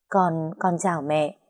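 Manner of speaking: ordinary delivery, nothing marked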